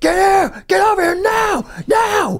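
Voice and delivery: very high, drawn-out screaming. Telling a story, speaker acts out a friend screaming at a man in the open: retelling a friend's screaming. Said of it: "Like just screaming at him like".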